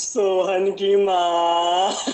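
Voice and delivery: low, slow, drawn-out ghostly call.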